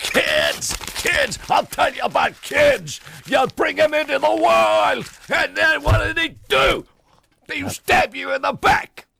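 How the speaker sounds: mock-angry ranting. Retelling a man who pulls out his son's photograph, retelling an angry outburst. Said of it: "and he gets real angry".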